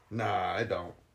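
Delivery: put-on flat, dismissive teen voice, low and soft.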